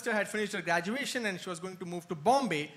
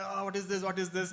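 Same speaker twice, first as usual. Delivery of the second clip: put-on tearful crying voice. Retelling how the speaker's mom reacted, imitating someone crying.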